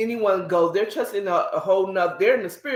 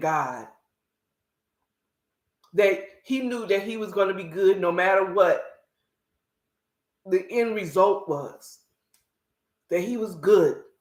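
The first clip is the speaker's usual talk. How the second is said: tearful, teary voice. Recalling a testimony told after a man's death, getting teary. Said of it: "I'm getting a little teary now".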